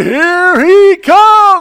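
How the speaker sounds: mock announcer voice catching. Retelling a call of a long field goal, imitating the announcer's voice skip. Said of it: "there was this skip in the voice of the announcer".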